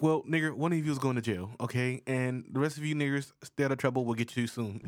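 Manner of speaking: ordinary talk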